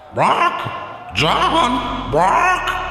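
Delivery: put-on screechy, screeching bird voice. Voicing a bird in a tabletop game, screechy bird voice. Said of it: "in a real screechy".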